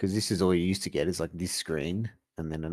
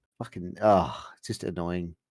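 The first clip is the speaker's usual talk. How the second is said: plain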